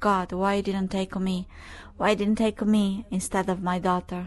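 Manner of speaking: ordinary delivery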